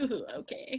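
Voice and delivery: soft-spoken, gentle, breathy little murmur. Imitating a quiet friend finally talking: imitating Brad's soft-spoken voice. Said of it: "that's my impression of him".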